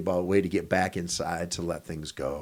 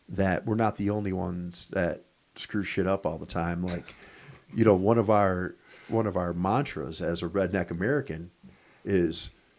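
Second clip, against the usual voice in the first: ordinary talk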